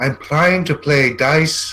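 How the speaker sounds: very slow, irritated voice. Narrating a character who turns and looks at the listener, annoyed. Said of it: "looks at you annoyed".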